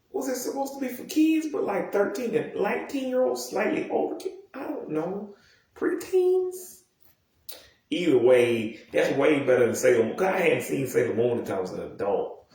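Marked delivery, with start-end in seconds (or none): 0.2-6.8 very high, disbelieving squeak. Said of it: "I'm like".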